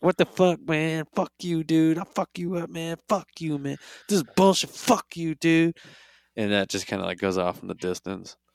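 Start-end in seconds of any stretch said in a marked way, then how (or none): 0.0-5.8 high, all-out, acted screaming fit. Retelling what she shouted after Goku left: retelling her screaming. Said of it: "And she's screaming".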